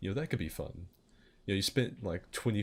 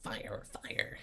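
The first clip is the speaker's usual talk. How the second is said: breathy, whispered cartoon-character voice; 5 dB quieter than usual. Asked for a sample, the speaker does their Beavis impression. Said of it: "Get a sample of your Beavis impression".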